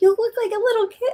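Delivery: put-on high, loud child voice.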